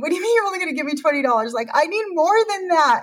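high, tearful words coming out through sobs. Recounting arguing with him over a twenty-dollar limit, the speaker acts out crying. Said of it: "I remember crying and saying".

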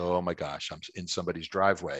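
plain

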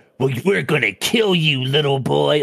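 put-on menacing cartoon villain voice. Acting out how a typical movie character would say it: cartoonish villain voice. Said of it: "cartoonish villain shit".

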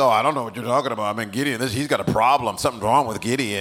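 put-on skeptical, unconvinced, doubtful tone. Voicing listeners' doubtful reaction to the preacher: imitating a skeptical congregation. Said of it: "Look at me like".

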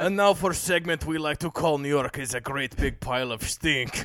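put-on Russian accent throughout.

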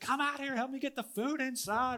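high-pitched, urgent shout. Retelling a storm, the speaker re-enacts yelling at the kids: retelling a yell. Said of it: "I'm yelling at the kids".

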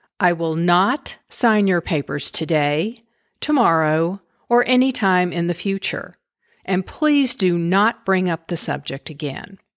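ordinary talk

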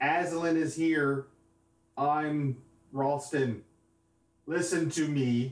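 full-throated, high scream at the top of the lungs. Playing a character who calls out while casting a spell: screaming at the top of lungs. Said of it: "I'm gonna scream at the top of my lungs".

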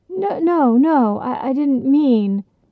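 stammering to a halt. A woodcutter answers the Empress, stammering to a halt. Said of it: "the woodcutter stammered to a halt".

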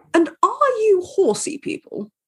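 very high, uptight, swooping posh voice. Retelling what a very posh woman asked their table: imitating her uptight voice. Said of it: "in the most shoulders back, uptight voice".

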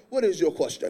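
put-on deep, soft, very low Bahamian-accented voice. Retell the preacher's reply to a man with one question, in Dr. Monroe's Bahamian accent. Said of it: "He got like this accent".

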